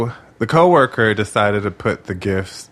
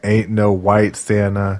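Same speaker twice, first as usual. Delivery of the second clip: normal talking voice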